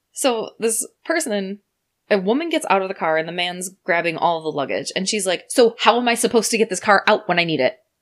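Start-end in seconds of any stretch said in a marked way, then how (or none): 5.5-7.8 loud, pushy, combative, aggressive tone. Retelling a hotel guest's complaint about getting her car back: imitating an aggressive woman. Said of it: "why are you so aggressive?".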